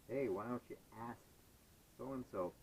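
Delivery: plain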